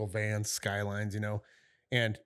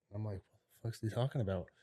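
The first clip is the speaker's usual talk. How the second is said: ordinary talk, nothing marked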